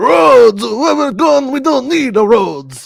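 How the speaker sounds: squeezed-up, raspy high voice. Co-host pressed to do the impression quotes a movie line as Watto doing Doc Brown. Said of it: "That's my Watto doing Doc Brown".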